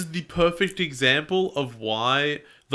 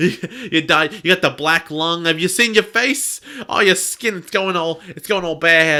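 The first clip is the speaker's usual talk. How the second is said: put-on old grandma voice, higher and louder; 4 semitones higher, 7 dB louder than usual.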